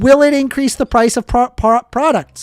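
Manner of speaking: acted yell. Speaker retells repeatedly pressing someone with a question, retelling a yell. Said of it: "I was yelling at them".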